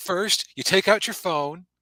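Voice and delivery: very high, angry, condescending talking-down tone. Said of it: "angry and condescending".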